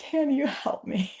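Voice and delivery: crying, tearful, high-pitched, slow. Retelling a phone call to a therapist: imitating own past crying. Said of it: "I was crying on the phone".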